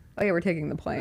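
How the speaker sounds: plain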